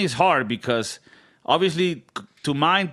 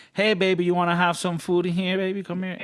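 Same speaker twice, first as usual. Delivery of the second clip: high, sweet-talking, badly done fake Southern lady accent; 5 semitones higher than usual. Speaker imitates an older woman being nice to the speaker, in a bad Southern accent. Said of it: "I don't do a good Southern accent".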